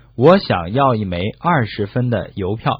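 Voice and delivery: ordinary talk, nothing marked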